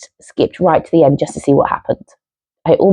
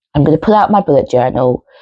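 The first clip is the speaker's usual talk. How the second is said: plain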